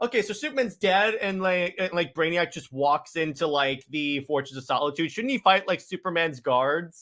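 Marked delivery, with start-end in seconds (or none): none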